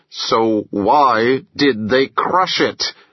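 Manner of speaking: spoken through clenched teeth. Narrator reading Bo's question about the crushed SUV, through clenched teeth. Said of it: "Through clenched teeth".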